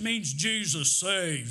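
big, deep, slow, drawn-out voice. Telling a story, quoting a man's answer to some passersby, imitating a big deep voice. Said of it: "Big old deep voice".

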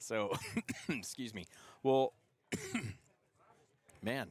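choked voice catching, halting, words getting stuck. Podcast host stumbling mid-question to a guest, choking while talking. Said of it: "I keep choking here".

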